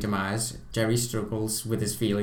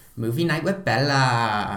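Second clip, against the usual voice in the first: heavy, slow sarcasm with a name stretched out; 4 dB louder than usual. Quoting an actress's favourite line from a film: retelling a sarcastic line. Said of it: "she sarcastically goes".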